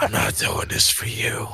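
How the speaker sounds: raspy villain voice. Quoting a man from the set in that raspy evil voice. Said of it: "that raspy evil voice".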